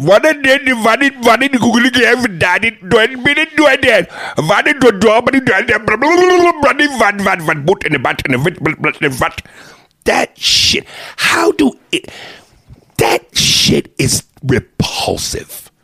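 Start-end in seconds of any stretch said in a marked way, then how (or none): 0.0-9.4 mock Indian accent. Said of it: "Indian men".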